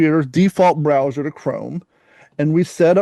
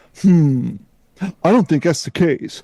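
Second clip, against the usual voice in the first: put-on condescending, superior, talking-down voice. Retelling a chatbot's reply to a woman's question: mock-condescending ChatGPT voice. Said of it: "he had like this real condescending voice to him".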